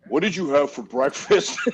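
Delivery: bass-heavy, deep-set, low voice. Imitating a guy asking a crying teenager about breakfast, in a deep voice. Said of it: "he always had this deep voice".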